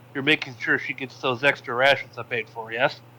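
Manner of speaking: ordinary talk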